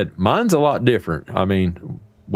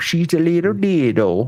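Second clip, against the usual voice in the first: put-on cute voice, higher; 8 semitones higher than usual. Retelling talking about a tiny puppy: imitating a cute voice. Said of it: "being cute and use the voice".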